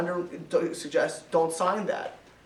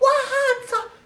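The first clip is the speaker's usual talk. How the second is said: mock, high, stretched-out scream on "what"; 5 dB louder than usual. Telling a true story, the speaker imitates a woman screaming her head off. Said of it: "And she screams her head off".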